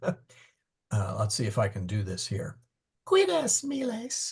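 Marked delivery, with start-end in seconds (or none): 3.0-4.3 clumsy, bad falsetto, very high. Trying to copy the falsetto a man uses on a recording, falsetto. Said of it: "goes to a falsetto".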